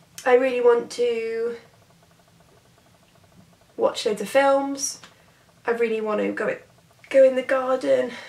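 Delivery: with hiccups. Telling viewers everything you really want to do, hiccuping. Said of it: "Sorry, I'm hiccuping".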